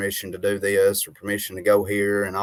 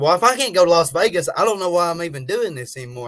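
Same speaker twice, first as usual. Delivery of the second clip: mad, fed-up, angry outburst, pitched up; 9 semitones higher, 4 dB louder than usual. Retelling own words from a phone call: retelling own angry words. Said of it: "I was so mad".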